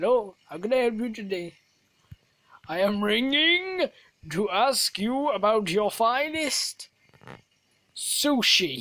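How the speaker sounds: slow, loud, bad put-on Indian accent. Speaker acts out a phone call after warning it's a bad indian accent. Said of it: "This is my bad Indian accent".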